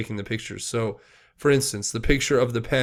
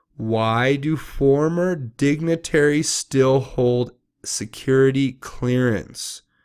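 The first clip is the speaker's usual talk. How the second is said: deliberate, unhurried, slow, careful reading; 3 semitones higher, 4 dB louder than usual. Reading notes aloud and stopping to take one question, reading slowly. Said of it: "I just wanted to read that slow".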